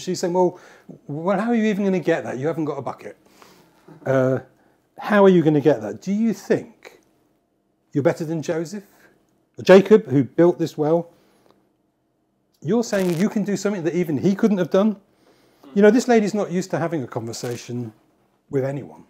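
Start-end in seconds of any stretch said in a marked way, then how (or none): 0.3-15.0 mocking, sarcastic, facetious retort. Retelling the woman's reply at the well: imitating a sarcastic woman. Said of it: "It's almost as if this lady's sarcastic".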